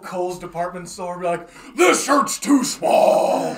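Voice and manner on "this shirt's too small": very loud, slow, very high superhero bellow. Friends joking about dressing as Batman in a department store; Batman voice. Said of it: "just talk like that".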